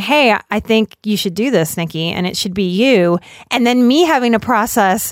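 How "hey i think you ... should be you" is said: ordinary talk, nothing marked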